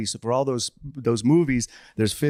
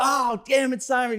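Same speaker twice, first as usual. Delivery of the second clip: squeaky, very high, slow, drawn-out cry; 12 semitones higher than usual. Retelling a prank on a coworker: Kevin Hart impression. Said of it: "that was my Kevin Hart impression".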